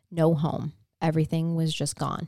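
ordinary talk

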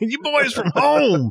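raspy, high, loud voice. Telling how you went up to Rooker and said Roll Tide, give his reply in a raspy Rooker voice. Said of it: "his lovely raspy voice".

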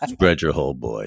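deep commanding voice. Trying out a filthy dominant line in conversation, a bit Sam Elliott-like voice. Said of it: "That one had a little bit of".

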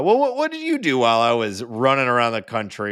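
usual speaking voice

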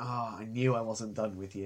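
very quiet, hushed, understated, almost secret delivery. Retelling the Doctor's line from the episode, imitating someone speaking very quietly. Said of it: "he's just sort of very quietly like".

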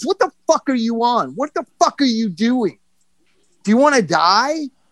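play-acted restrained, contained, mild yelling. Retelling how a man hovered over him after he fell, yelling at him. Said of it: "John Doe yelling at you like that".

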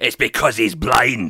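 put-on loud Glaswegian accent. Retelling how an assistant told off a woman, the speaker does Jane's Glaswegian accent. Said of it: "in her Glaswegian accent".

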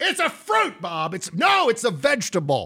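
high, mock squabbling voices.

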